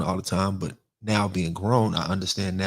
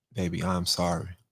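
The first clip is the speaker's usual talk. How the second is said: put-on tearful crying voice, quieter; 4 dB quieter than usual. Retelling a prison visit where his mother apologized: imitating his mother crying. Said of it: "she was crying and she said".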